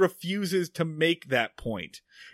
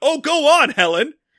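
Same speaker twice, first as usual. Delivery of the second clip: raised, pitched-up, urging yell; 8 semitones higher, 8 dB louder than usual. Speaker reenacts what they yelled at the tv during a scene: retelling a yell at the tv. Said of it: "I'm screaming at the TV".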